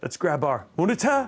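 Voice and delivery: put-on British accent. Talking viewers through a setup, repeating a line in a British accent. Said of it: "It always sounds better when you say it in a British accent".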